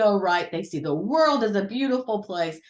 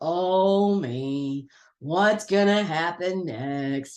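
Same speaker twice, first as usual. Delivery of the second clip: low, very slow, drawn-out, gloomy voice; 5 semitones lower than usual. Describing a character from the Winnie the Pooh cartoon, in Eeyore's low, slow voice. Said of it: "he had that low voice, kind of slow".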